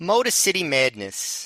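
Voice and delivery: playful put-on New York accent. Saying the title of a Ring of Honor DVD: fun New York accent. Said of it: "whose name I get to say with a fun New York".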